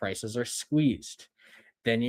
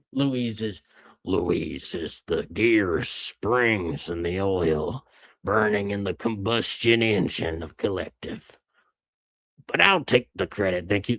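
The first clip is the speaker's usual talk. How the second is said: put-on old prospector voice; 2 semitones lower, 3 dB louder than usual. Mimicking how the other person just said the line, in an old prospector voice. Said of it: "So I sounded like an old prospector".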